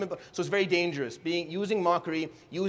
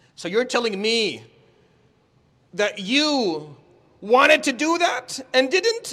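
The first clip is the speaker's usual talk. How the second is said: high, loud, mocking sing-song, you stretched out; 6 semitones higher, 6 dB louder than usual. Showing how to deliver a line with mockery: mocking voice. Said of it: "that voice where you say".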